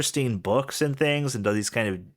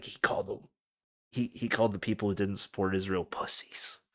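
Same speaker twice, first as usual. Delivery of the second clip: mischievous, low, hushed voice; 5 semitones lower, 7 dB quieter than usual. Retelling what his dad says, imitating dad lowering his voice. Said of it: "he'd like lower lower his voice".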